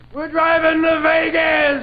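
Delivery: acted very high scream, very slowly dragged out. Describing a friend who suddenly stands up, retelling a friend's scream. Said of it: "one of your friends stands up and screams".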